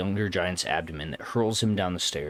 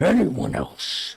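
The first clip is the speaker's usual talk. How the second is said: loud, raised snarling growl, catching breath; 9 semitones higher, 5 dB louder than usual. Narrating a story, the king stands up and challenges the crowd, growling. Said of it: "he growls".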